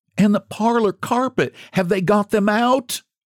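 gasped out in a very high pitch. Narrator reading a woman asking about goods carried from a burning house; gasping. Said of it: "gasped she".

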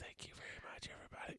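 put-on whisper. Joking that the late-night moderator must whisper on air: imitating Nicole whispering. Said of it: "Nicole's talking like this".

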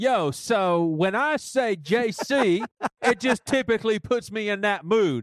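slow, hip hop style delivery. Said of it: "Can you say it in the D C Talk voice?".

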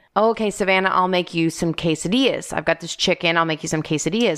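usual speaking voice

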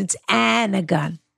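put-on low, creaky speech.

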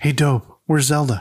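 hushed whisper. Narrator reads Maynard sneaking up on Dobie at school, whispering. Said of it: "He whispers".

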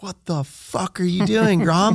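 put-on, very high-pitched screaming yell. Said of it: "he's screaming at me".

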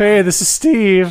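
cracking voice. Urged on by another host, Steve introduces himself on the show, voice cracking. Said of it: "My voice just cracked".

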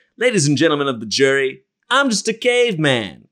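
put-on caveman lawyer voice. Retelling a sketch where a caveman lawyer addresses the jury: Phil Hartman caveman lawyer voice. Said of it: "he's dressed as a caveman".

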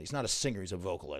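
normal talking voice

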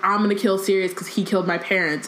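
usual speaking voice

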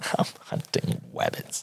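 hushed breathy whisper, r pronounced as w. Teasing someone who said 'fabwick', the speaker does an Elmer Fudd voice. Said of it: "Are you Elmer Fudd now?".

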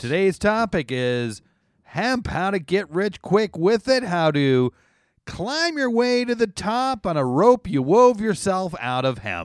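TV ad pitchman delivery. Introducing today's topic, sounding like a commercial for hemp. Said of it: "You sounded just like a commercial for hemp".

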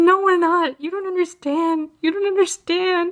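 high-pitched, tearful, crying delivery. Retelling refusing a friend's invitation after a five-hour exam, acting out crying. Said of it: "I'm crying".

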